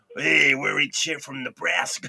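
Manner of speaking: slow, fake American accent, laid on. Retelling a band's stage banter: imitating a fake American accent. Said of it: "fake American accents".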